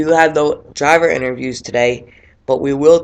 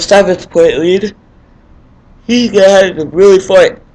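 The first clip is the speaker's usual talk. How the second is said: yawning, words stretched out, raised voice; 5 semitones higher, 6 dB louder than usual. A race commentator, early in the morning, keeps talking: yawning while talking. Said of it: "Sorry, I'm yawning there".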